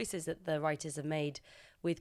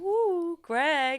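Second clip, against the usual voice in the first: high, loud, teasing cooing voice. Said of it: "Tom and Shiv are like".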